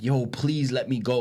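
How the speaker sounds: acted-out strained, pained, hurting voice. Retelling a wrestling match where a wrestler's arm is pulled back: retelling a scream of pain. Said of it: "he's screaming like".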